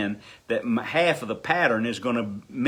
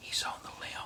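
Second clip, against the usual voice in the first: barely audible, hushed, very soft still whisper. Acting out a hunting companion who speaks to you without moving his head, whispering. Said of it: "he whispered to me".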